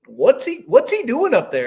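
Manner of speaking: put-on thick Pennsylvania Dutch accent, very high, swooping. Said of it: "has that strong German accent".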